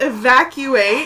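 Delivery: imitated yell. Retelling a shout through a headset during a show: retelling a yell. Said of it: "I yell through my headset".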